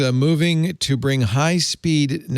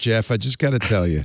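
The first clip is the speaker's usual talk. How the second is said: ordinary talk, nothing marked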